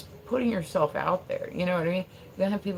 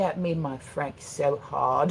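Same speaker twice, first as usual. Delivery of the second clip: imitated prim London accent. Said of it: "she's like".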